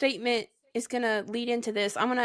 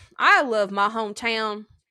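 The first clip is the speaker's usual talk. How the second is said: slow, exaggerated, over-the-top rural Southern accent; 3 dB louder than usual. Reading a comment aloud, exaggerated Southern rural accent. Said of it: "I'm going to have to put on my best, best accent for y'all".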